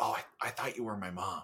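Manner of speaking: quiet, hushed, soft half-whisper. Retelling a TV show's final scene, quoting the fake son: imitating a half-whisper.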